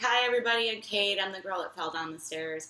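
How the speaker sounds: ordinary talk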